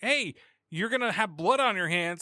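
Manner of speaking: ordinary talk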